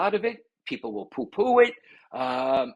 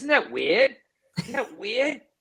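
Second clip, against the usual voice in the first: put-on Boston accent, pitched up; 6 semitones higher than usual. Quoting how people react to synchronicity, in a Boston accent. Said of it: "in my best Boston accent".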